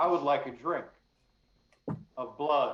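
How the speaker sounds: overly loud voice. Playing a character in a role-play scene, very overly loud voice. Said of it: "and a very overly loud voice".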